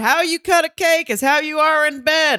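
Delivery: play-acted, shrill, very high shouted yell. Retelling what the same person yelled out during the cake scene: imitating a yell. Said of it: "yelled out".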